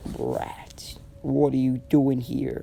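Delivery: low, deep, menacing monster growl, mean beast voice. Reading a story aloud, the Nine-Tails speaks to Naruto in a deep voice. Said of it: "He said with a deep voice".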